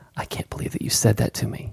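imitated whisper-shouting. Describing a redubbed argument video: imitating a whisper shout. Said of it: "somebody that's just whisper shouting".

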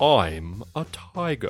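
put-on British-accented voice. Describing a toy voice box recording after a tiger roar, in a very British voice. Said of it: "this very British voice going".

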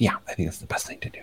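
quiet whispering. Co-host agreeing to finish up the show, whispering. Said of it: "I don't know why I'm whispering".

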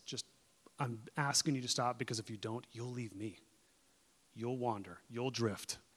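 tender, gracious, loving, gentle voice. Voicing Jesus asking someone to stop: gracious, loving, gentle voice. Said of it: "that gracious, loving, gentle voice that says".

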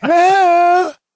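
put-on high, loud Southern belle accent.

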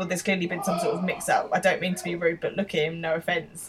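ordinary talk

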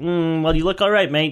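put-on Australian accent. Retelling what a first aider said about a sore shoulder: imitating an Australian accent. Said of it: "'Cause he's fucking Australian".

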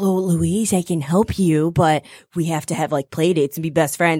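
put-on very low, eerie, creepy kid voice. Retelling a cartoon scene, imitating the creepy classmate: imitating a creepy classmate. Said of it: "she's just really, like, creepy".

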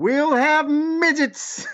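proud yell way up high. Retelling a line Bill Watts said: imitating Bill Watts proudly yelling. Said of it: "he proudly yells".

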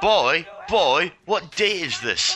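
shouting. Suggesting what a game character should have shouted out: yelling. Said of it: "You're yelling at a C D rom".

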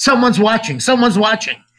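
high, rushed, urgent, repeated alarmed cry. Retelling a story, acting out a character who suddenly starts shouting.

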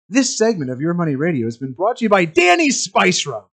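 on-air radio announcer style voice. Taking a turn at a sponsor read, in a radio announcer voice. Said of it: "Is that a good announcer voice?".

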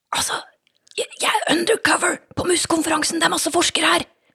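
speaking in a whisper. [name] answers Anna's phone call while undercover at a conference: whispering. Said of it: "hvorfor hvisker du?".

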